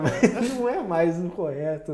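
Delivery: loud, laughing through the words while talking. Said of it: "Tem que falar que eu tô dando risada".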